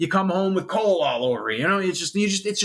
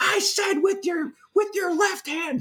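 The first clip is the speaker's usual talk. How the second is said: shrill, very high-pitched, drawn-out scream; 12 semitones higher than usual. Telling a story, he acts out a cop screaming at Mike, retelling a scream. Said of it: "screams it".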